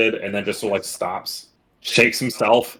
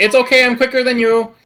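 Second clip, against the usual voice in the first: high-pitched, loud yell. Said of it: "Peck does yell back".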